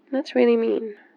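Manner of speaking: pouty, sulky delivery. Girlfriend speaking to her love, who has to go for work, pouty.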